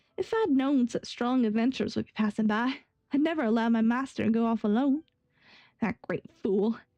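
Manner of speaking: rough attempt at Texan accent. Reading a game character's line aloud, the player uses a put-on texan accent. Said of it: "I can't do a haha in Texan".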